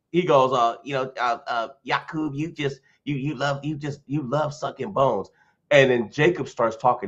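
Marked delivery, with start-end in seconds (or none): 1.8-5.2 put-on nerdy man voice. Retelling what another guy said in an argument: nerdy Poindexter voice. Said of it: "he sounds like a, a, a Poindexter with glasses".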